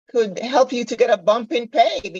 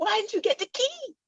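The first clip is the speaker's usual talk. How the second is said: high, soft, flustered and exasperated tone. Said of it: "And I'm getting flustered and I'm going".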